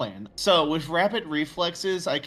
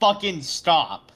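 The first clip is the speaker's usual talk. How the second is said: sudden, shouted in-character yell; 2 semitones higher, 4 dB louder than usual. Yelling in character at a snarling Nosferatu to stop moving: in-character yell. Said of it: "I just yell at him".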